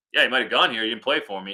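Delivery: mock flat deadpan. Retelling a coach's second answer to a reporter's question about a former player, imitating a deadpan reply. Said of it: "And the coach just deadpanned".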